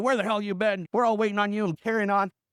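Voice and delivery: plain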